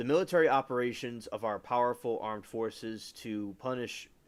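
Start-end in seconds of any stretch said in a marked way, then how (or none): none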